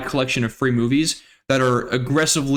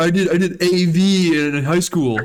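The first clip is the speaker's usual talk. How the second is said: teasing, mocking, high, very slow, drawn-out voice; 5 semitones higher, 3 dB louder than usual. Teasing another speaker about movie sound by imitating Greg. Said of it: "look at me, I'm Greg".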